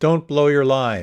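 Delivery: very loud, high, theatrical stage declamation, blurted out. Retelling a performer on stage blurting out his line: retelling a very dramatic voice. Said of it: "in a very dramatic voice".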